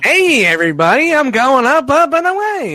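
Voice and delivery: very high, loud, squeaky bad voice. After your last try is called the worst ever, try again with a bad Powerglide impression. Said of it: "That's even worse".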